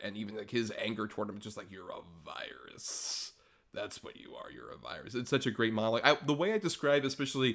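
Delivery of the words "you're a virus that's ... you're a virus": hushed, whispered, slow, bad American accent. Quoting an angry monologue, in Hugo Weaving bad American accent. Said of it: "covering up their bad American accent".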